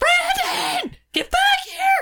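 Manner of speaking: high, loud, panicked scream.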